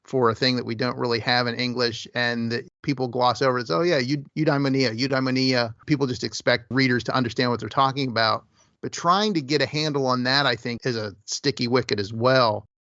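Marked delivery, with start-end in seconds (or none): none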